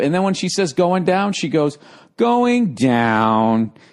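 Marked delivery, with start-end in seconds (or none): 2.2-3.7 depressing robotic elevator announcer voice, drawn out downward. Retelling how the elevator robot lady announces floors: imitating a depressing robot elevator voice. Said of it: "she's depressing".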